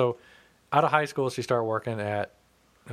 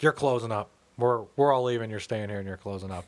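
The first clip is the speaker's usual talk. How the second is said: ordinary talk, nothing marked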